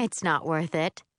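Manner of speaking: plain reading voice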